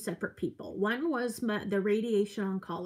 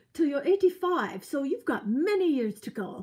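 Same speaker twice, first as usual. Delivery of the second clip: terrible put-on old English accent, higher; 5 semitones higher, 4 dB louder than usual. Retelling what the radiation oncologist said, in a terrible old English accent. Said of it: "this is a terrible English accent, old English accent".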